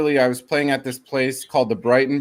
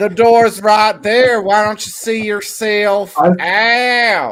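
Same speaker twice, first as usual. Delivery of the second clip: put-on Texas accent, loud, high, long stretched-out "out"; 8 semitones higher, 6 dB louder than usual. Playing a Texas guy shutting someone down, the speaker imitates a Texas accent. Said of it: "You sound so Texas".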